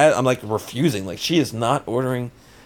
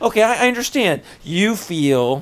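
put-on sarcastic tone, higher; 5 semitones higher than usual. Retelling an argument with his wife: imitating his own sarcastic tone. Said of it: "this is sarcasm".

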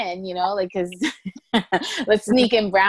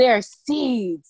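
complaining voice, higher pitch; 3 semitones higher, 3 dB louder than usual. Imitating the son complaining about kiwi seeds: imitating her son complaining. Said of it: "He's like".

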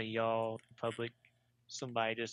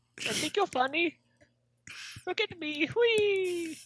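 very high, loud cartoon voice, stretched-out whee; 6 dB louder than usual. Trying to talk like a suggested actor, Mario-like voice. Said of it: "You just turned into Mario right there".

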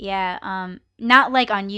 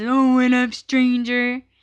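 put-on bitter tone, higher; 3 semitones higher than usual. Acting out a bitter greeting to someone not seen lately: imitating a bitter person. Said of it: "I'm not that bitter person as".

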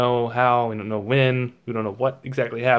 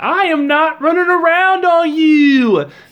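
screaming at full blast, shrill, very high, very loud; 8 dB louder than usual. Retelling an argument, imitating the lady screaming back at the man. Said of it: "the lady is like screaming".

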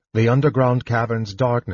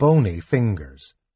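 usual speaking voice

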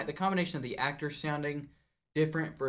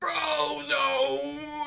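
put-on confused old man yelling, higher and louder; 12 semitones higher, 6 dB louder than usual. Joking about an old man in a hospital bed: confused old man yelling out. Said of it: "He just starts yelling out stuff".

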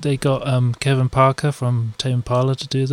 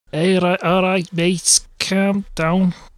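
clumsy, failed Scouse accent, pitched higher; 5 semitones higher than usual. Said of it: "I can't do Scouse".

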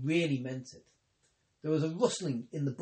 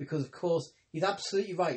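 ordinary delivery, nothing marked

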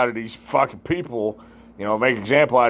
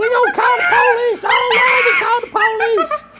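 put-on very high, loud, piercing shriek; 6 dB louder than usual. Retelling what a woman screamed as a car drove off: imitating someone screaming.

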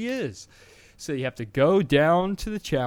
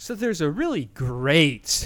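most sarcastic possible, dripping sarcasm on "great"; 2 semitones higher than usual. Speaker explaining a game feature they find terrible, sarcastic 'great'. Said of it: "I say great in the most sarcastic way you can say it".

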